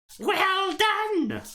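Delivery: very high, piercing, shrill voice. Narrator voicing a stranger applauding from the darkness, shrill voice. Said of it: "it should be shrill".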